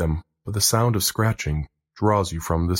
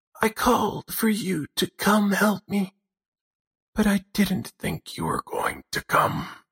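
put-on frail, weak, very high old woman's voice; 12 semitones higher than usual. Narrator voicing an old woman who answers the visitor, in a weak old woman's voice. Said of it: "a weak voice through the door".

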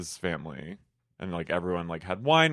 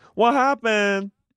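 put-on very high, loud, small little-kid voice; 6 dB louder than usual. Retelling Lisa's question to Monica, who ran away, imitating a niece or nephew. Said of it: "now she sounded like my niece or nephew".

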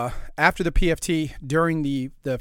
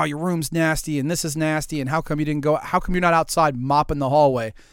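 normal talking voice

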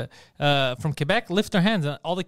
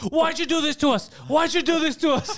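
mock, very high-pitched yelling; 11 semitones higher than usual. Acting out a sketch, yelling at a little kid: yelling at a kid.

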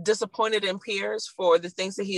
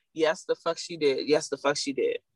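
ordinary talk, nothing marked

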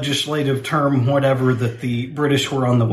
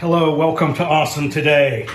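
forceful, aggressive, in-your-face delivery; 3 semitones higher than usual. Opening the show, the host greets listeners in an aggressive way. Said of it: "That got aggressive".

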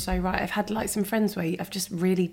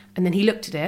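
ordinary delivery

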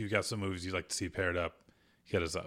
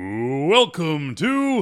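boxing ring announcer voice, much higher, louder; 7 semitones higher, 12 dB louder than usual. Asked by a co-host to do the rumble intro for their show, boxing ring announcer voice. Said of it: "Can you do the let's get ready to rumble".

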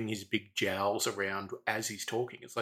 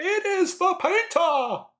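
very high, slow, loud yell. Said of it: "just yells at him".

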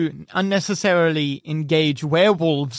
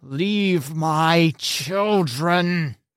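snarling, growled voice with a protective tone. Narrating a game, the speaker voices the protective adult guarding her cub: growling. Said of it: "she growls at you".

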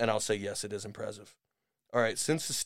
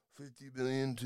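quieter, muttering put-on old man's voice; 3 semitones higher, 8 dB quieter than usual. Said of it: "I can't do a Joe Biden impression".

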